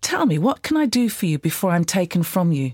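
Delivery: ordinary delivery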